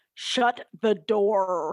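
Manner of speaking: put-on American accent, hard R, drawn-out door. Doing a habitual movie-character impression: Doctor Strange American accent, hard R. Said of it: "My impression of Doctor Strange ... like the super hard R".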